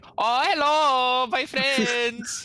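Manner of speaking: put-on very high, slow, drawn-out, awful German accent. Imitating a YouTuber's annoying character: worst German accent. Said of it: "the worst German accent".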